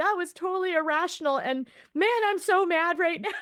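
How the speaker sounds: mock tearful sobbing in a very high-pitched voice. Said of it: "sobbing like a small child".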